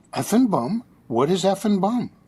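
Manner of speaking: completely earnest, dead serious tone. Retelling a kid's question about an unfamiliar phrase: imitating someone dead serious. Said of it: "he looks at me dead serious".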